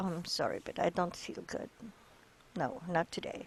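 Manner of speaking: very soft, hushed, subdued and sad. Demonstrating pitch inflection with an example line, showing sadness. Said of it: "Showing sadness".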